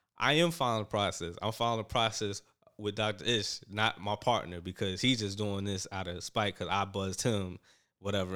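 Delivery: ordinary delivery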